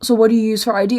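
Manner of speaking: usual speaking voice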